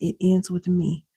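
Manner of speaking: ordinary talk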